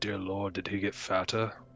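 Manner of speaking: soft, hushed sideways half-whisper. Nudging Judas as they walk up, leaning in to him, half-whispering. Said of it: "just kind of whisper to him".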